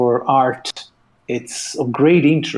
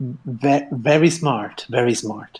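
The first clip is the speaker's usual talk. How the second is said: usual speaking voice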